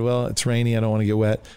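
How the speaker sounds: plain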